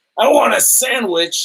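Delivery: mock, high-pitched, furious barking voice. Retelling how a pissed-off lady demanded a sandwich: imitating an angry customer. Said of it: "So pissed off".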